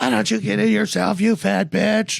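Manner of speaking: put-on high, creaky child voice screaming.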